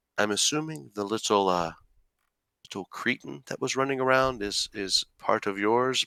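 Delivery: soft, hushed half-whisper in close confidence. Playing a ship's master who leans in close; half-whispering. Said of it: "he kind of leans in, like whispering".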